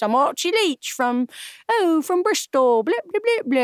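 put-on high Yorkshire accent. Show how the man known as Cary Grant used to talk, in Archie Leach's Yorkshire accent. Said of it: "He had an accent. He talked like this".

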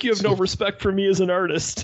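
play-acted, high, exasperated, aggrieved, frustrated grumble. Retelling a movie scene where a character protests a cremation: imitating a frustrated character. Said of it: "he gets all frustrated".

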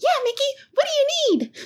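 very high, bouncy, swooping cartoon voice. Voicing a summoned figure answering a player: Mickey Mouse voice. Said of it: "do a voice similar to Mickey Mouse".

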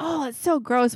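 high, mock child's yell of pure disgust. Retelling how a twelve-year-old reacted to his wound: imitating someone yelling. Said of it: "he's yelling".

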